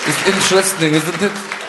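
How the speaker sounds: put-on French accent.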